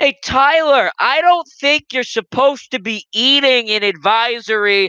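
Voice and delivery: very loud, very high booming call-out. Retelling what Scott would say to the speaker, imitating Scott talking loudly. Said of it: "very loudly be like".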